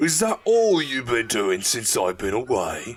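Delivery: low, gruff, slurred voice with a demanding tone. A narrator reads the miner's demand to a catatonic woman: gruff, slurring demand. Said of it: "his gruff voice demanded, slurring".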